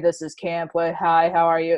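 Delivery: ordinary talk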